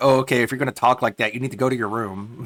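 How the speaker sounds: offhand, casual reprimanding tone. Reacting to a clip, imitating the staff scolding Corbin. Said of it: "they're just like".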